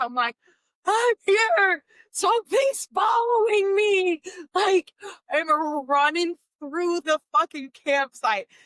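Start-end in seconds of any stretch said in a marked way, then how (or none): 0.8-4.2 play-acted, high-pitched screaming. Retelling running toward the campsite at night: reenacting own screaming. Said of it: "so I just start screaming".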